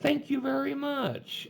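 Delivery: very high, slow, sarcastic tone. Retelling replies from past arguments downtown: imitating own sarcastic thanks. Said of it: "I would sarcastically go".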